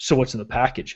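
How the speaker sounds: put-on, hushed, breathy, suspicious, accusing whisper. Retelling a shipping clerk's question about the package: imitating an accusatory tone. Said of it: "Very accusatorily".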